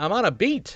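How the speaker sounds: put-on old-time 1920s New York gumshoe detective voice. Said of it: "a nineteen twenties gumshoe".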